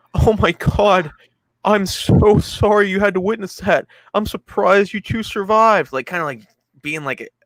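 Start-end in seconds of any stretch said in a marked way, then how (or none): 0.2-6.0 mock hollow sympathy, high-pitched and slow. Retelling what a character says to the survivors: imitating fake sympathy. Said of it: "acting like he's sympathetic".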